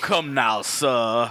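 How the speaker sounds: put-on super articulate actor-style voice. Describing an actor famous for Blacula, imitating super articulate speech. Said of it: "super articulate".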